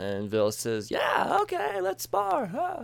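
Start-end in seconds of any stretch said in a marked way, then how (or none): 0.9-2.8 very high cartoon-hero voice, pitch swinging wildly. Recapping a show, [name] agrees when Tamora asks to spar: terrible Goku impression. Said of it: "that was a terrible Goku impersonation".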